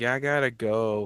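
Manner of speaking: mock disappointed, deflated, slow let-down voice. Imitating a character coming downstairs: disappointed voice. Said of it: "he had this voice of disappointment where he's like".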